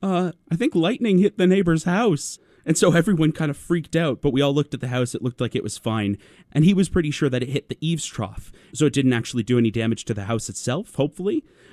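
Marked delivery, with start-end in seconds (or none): 0.0-2.4 embarrassed, awkward, sheepish, slightly high voice. Retelling a guest's reaction to a lightning flash: imitating someone speaking sheepishly. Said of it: "he very sheepishly went".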